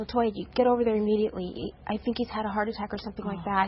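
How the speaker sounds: plain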